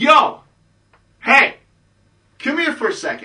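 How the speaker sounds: very high, loud, drawn-out calling-out holler. Retelling how a friend called a girl over: imitating someone yelling. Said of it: "So he starts yelling".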